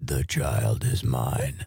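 creepy low put-on voice. Trying out a voice for a haunted house, creepy voice like RFK Jr. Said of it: "You kind of sound like RFK Jr".

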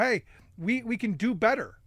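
ordinary delivery

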